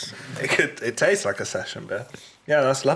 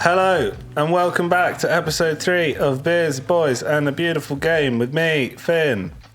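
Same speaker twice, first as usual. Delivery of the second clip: cheerful, bright, happy glad-to-be-here tone; 2 semitones higher, 4 dB louder than usual. Welcoming listeners back to the episode: sounding really happy. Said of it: "You sound really happy to be here".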